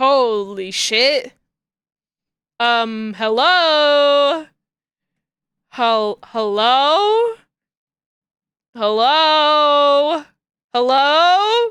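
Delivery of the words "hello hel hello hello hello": very slow, drawn-out, plaintive calling out. Calling out hello again and again, like someone locked out. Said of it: "I sound like somebody who's been locked out of the house".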